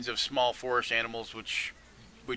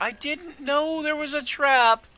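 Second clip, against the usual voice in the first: very high, very loud, tiny shrill yell; 9 dB louder than usual. Narrating a game scene where a very tiny voice yells. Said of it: "a very tiny voice yell".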